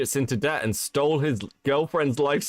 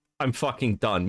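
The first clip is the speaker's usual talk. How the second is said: mock exasperated tone, lower; 3 semitones lower than usual. Retelling a reply from someone shouted at for forty minutes: imitating a fed-up voice. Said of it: "You can hear it in his voice".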